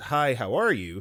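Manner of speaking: ordinary talk, nothing marked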